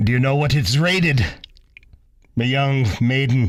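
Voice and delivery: talking like a pirate. For Talk Like a Pirate Day, speaker asks the other person a question in pirate voice. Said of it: "I'm going to be sitting here with a pirate".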